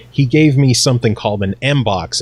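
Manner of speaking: normal talking voice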